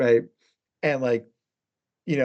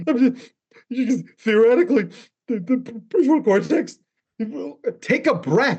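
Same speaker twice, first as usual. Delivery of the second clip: high, strained crying voice. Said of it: "that's my crying voice".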